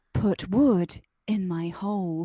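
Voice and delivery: seductive, very slow, drawn-out, sultry sexy voice. Asked to say the phrase again, speaking in a sexy voice. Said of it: "say that in your sexy voice".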